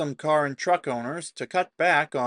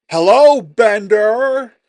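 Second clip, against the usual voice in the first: terrible put-on voice, very loud and high, belted; 8 semitones higher, 14 dB louder than usual. While reading a news article, speaker breaks into a terrible Biff impression. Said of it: "that was a terrible impression of Biff".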